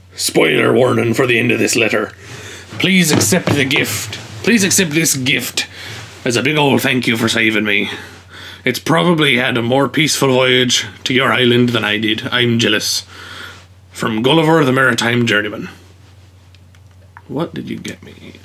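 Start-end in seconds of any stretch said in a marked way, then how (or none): 2.8-15.7 put-on pirate voice. Reading aloud a thank-you letter from a game character, in Gulliver's pirate voice. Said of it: "It's a pirate voice".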